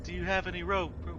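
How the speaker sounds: high, echoing call.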